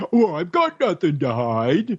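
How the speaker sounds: put-on goofy, dopey, dim-witted voice with swooping pitch. The speaker mocks people who shrug off government surveillance: goofy impersonation of a naysayer. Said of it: "I got to do my goofy impersonation here".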